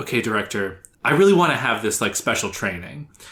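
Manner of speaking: ordinary talk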